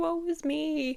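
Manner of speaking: high, whiny, self-pitying wailing voice.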